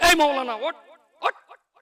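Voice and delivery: scolding voice. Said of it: "তম্বি করে বলছে".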